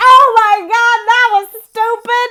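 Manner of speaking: mock very high, very loud, shrill freak-out. Retelling own reaction to a past choice: acting out freaking out. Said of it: "I'm here freaking out like".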